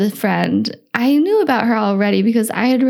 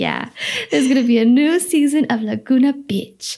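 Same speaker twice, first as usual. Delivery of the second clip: put-on, cute Mexican accent; 3 semitones higher than usual. Retelling what a man told them, imitating his cute Mexican accent. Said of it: "with his cute like Mexican accent".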